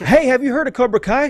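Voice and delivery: shrill yell, very high, excited. Imitating a speaker who keeps asking the audience about cobra kai: imitating someone yelling. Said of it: "he yells at us".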